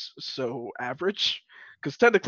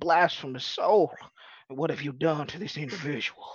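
put-on country Texas accent with preacher-style delivery. Retelling what the preacher man said to him, in a small-town texas accent. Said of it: "the accent who was like straight out of small town Texas".

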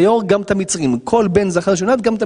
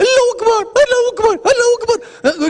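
put-on baby wail, much higher pitch. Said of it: "בקול של תינוק ערבי".

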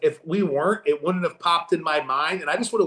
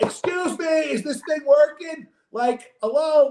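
pitched-up, rude, entitled, demanding complaining voice; 10 semitones higher than usual. Speaker retells how they acted while upset; mock douchebag complaining. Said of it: "I'm doing the douchebag thing where I'm like".

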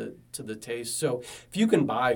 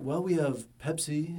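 put-on condescending voice; 4 semitones higher than usual. Retelling a brewery waiter's answer to a request for non-alcoholics, mimicking a condescending waiter. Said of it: "kind of somewhat condescendingly".

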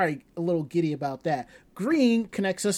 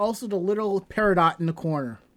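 ordinary talk

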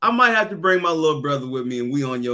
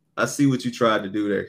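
ordinary talk

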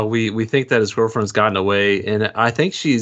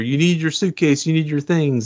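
put-on screaming, higher pitch; 5 semitones higher than usual. Retelling a movie scene, a man calling after a woman: retelling a scream. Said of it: "he's like screaming after".

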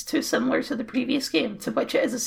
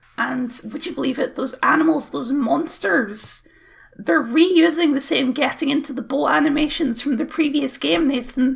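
ordinary talk

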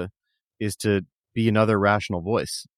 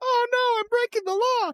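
squeaky, very high cartoon sitcom dad voice. Picturing the dad from Family Guy reacting, in a Family Guy dad voice. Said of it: "the dad and the Family Guy being like".

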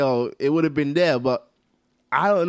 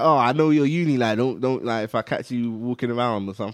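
usual speaking voice

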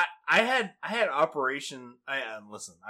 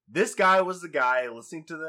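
ordinary delivery

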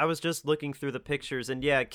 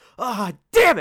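mock angry outburst, higher and louder; 8 semitones higher, 10 dB louder than usual. Retelling how a character broke a glass and swore: imitating an angry outburst. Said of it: "he got so angry".

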